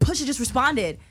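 mock proud, excited, important voice, very loud and high. Retelling how a friend announced news in the car: imitating Mike's happy, important tone. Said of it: "he said it so happily and, like, so importantly".

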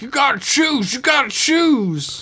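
very high, desperate shout.

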